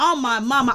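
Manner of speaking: ordinary delivery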